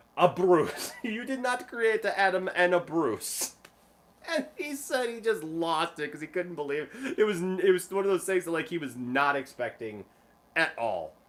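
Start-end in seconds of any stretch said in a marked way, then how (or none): 0.2-3.6 put-on older woman's European accent, higher and louder. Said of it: "this accent".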